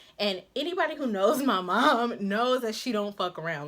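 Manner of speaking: normal talking voice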